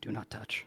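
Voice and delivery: soft, very quiet, hushed delivery. Playing a character showing magic to a warning: said very quietly. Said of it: "And he says very quietly".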